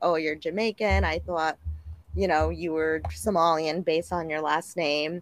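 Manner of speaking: normal talking voice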